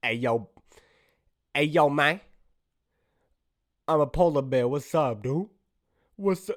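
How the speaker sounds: put-on, street-talking gangster bear voice. Voicing a polar bear character, deciding it could be a gangster bear. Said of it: "Could be a gangster bear".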